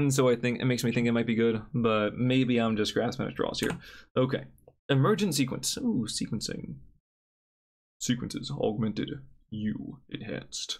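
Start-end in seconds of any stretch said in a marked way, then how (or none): 8.0-10.8 whispered, slow, breathy, soft, attempted otherworldly voice. Reading out card names, trying an Avatar voice. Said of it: "my attempt at an Avatar voice".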